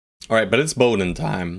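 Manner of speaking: voice cracking. Planning the next moves out loud, voice cracking. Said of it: "Oh god, my voice crack".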